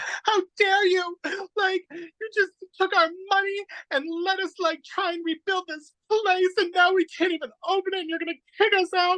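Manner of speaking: very high, overacted, teary sobbing outburst. Retelling a teenage girl confronting Ben Vereen at his trailer, imitating her crying. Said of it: "she starts crying at him".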